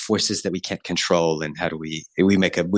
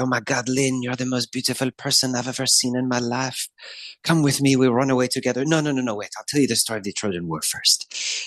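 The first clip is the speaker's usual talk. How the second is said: faux French accent, higher and slower; 6 semitones higher than usual. Describing faux French performers welcoming a guest into the theater, French accent. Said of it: "they speak in these very amazing French accents".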